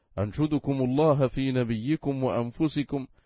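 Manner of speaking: ordinary talk, nothing marked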